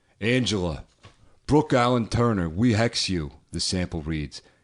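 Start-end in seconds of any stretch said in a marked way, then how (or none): 0.2-3.3 put-on Brooklyn accent, tough-guy voice. Reading a witches' hex aloud, doing it like Tony Danza. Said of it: "I'm just gonna do it like Tony Danza".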